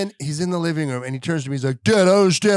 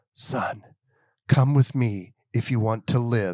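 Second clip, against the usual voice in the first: breathy, hushed half-whisper; 7 semitones lower, 4 dB quieter than usual. Retelling leaning over to a son from behind: half-whispering. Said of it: "I whisper in his ear".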